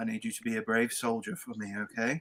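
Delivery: hushed, very soft, very quiet half-whisper. Comforting a frightened child in character: half-whisper. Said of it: "I'll whisper to him".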